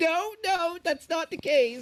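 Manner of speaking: put-on sudden, loud, shrill, very high, very slow outburst. Retelling how another player went from whispering to loud: imitating a sudden loud outburst. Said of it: "you were whispering, and then suddenly you were like".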